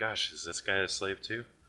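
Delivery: soft, mumbled muttering under the breath. A player's character mutters at the back of the group, under the breath. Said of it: "I kind of mutter in the back of the group to my under my breath".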